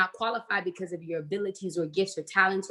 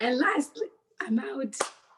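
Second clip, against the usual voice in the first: voice gone, giving out, going higher; 6 semitones higher than usual. Speaker tries to finish a talk to the audience; voice gone. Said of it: "But my voice is gone".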